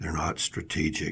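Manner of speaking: breathy, hushed, very soft whisper, barely voiced. Retelling what a caller says about an employee: imitating a whispered voice. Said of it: "I hear in kind of a whispered voice".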